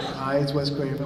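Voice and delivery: ordinary talk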